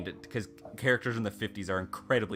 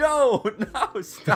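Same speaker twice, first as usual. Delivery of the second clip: put-on shout, higher and louder; 9 dB louder than usual. Retelling how the audience yelled at the movie screen: retelling yelling at the screen. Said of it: "we're all yelling, like".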